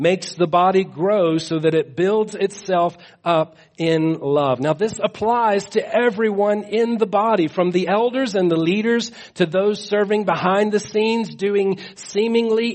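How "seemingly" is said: heavy stress on "seemingly". Speaking of church members serving behind the scenes, stress on seemingly. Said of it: "I emphasize that word seemingly".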